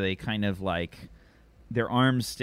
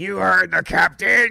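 shrill, very loud, rough-edged, very high shout; 11 semitones higher, 11 dB louder than usual. Voicing Weiler, who steps up to back the captain: Weiler voice. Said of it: "Weiler steps up and says".

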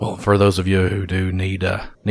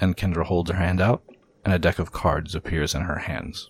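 ordinary talk, nothing marked

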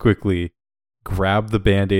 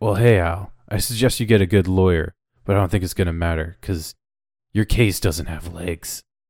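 cheesy, corny action-hero one-liner delivery. Delivering a TV-style one-liner to a bad guy: cheesy TV action one-liner. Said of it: "do you want the one-liner?".

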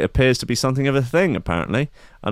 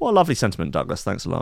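normal talking voice

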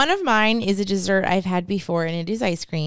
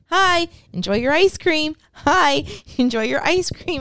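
put-on sweet, cute, higher-pitched toddler voice; 8 semitones higher than usual. Retelling how a toddler greeted everyone coming through the door, in a cute little toddler voice. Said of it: "in his cute little toddler voice".

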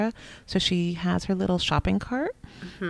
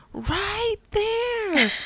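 put-on very high-pitched, screamed little kid's voice. Retelling a toddler yelling at the tv: imitating a child screaming. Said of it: "started screaming at the T V".

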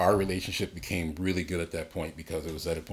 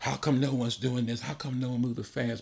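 mock furious, high, angry shrieking scream; 7 semitones higher than usual. Retelling how a woman came after the show, the speaker imitates her screaming. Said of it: "she comes and she's screaming".

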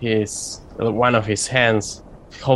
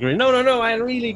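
high, frantic, distracted. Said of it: "and he's like".

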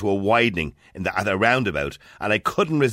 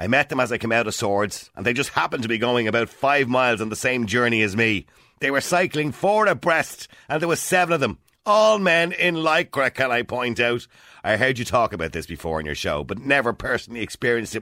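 ordinary delivery

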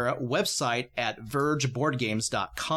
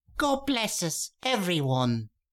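tiny, high, faraway little voice; 6 semitones higher than usual. Voicing a voice heard from inside as the scene ends: tiny voice. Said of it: "you hear a tiny voice say".

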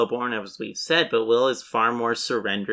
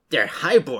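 plain

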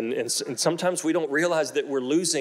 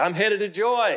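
acted, pitched-up holler; 7 semitones higher than usual. Retelling calling out from the bathroom while someone tries to sleep, retelling a yell from the bathroom. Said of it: "I'm yelling from the bathroom".

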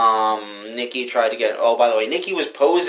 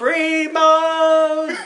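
mock drunken, raging yell, much higher pitch; 3 dB louder than usual. Speaker imagines shouting a catchphrase while drunk, mock drunken rage yell. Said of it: "In a fit of drunken rage".

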